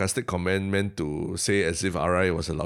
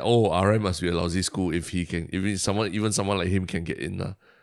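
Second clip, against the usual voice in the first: ordinary talk, nothing marked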